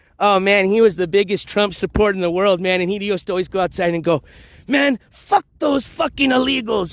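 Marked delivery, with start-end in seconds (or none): 4.7-6.9 put-on Mexican accent, pitched up. Quoting an immigrant Trump supporter, Mexican accent. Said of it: "with his Mexican accent".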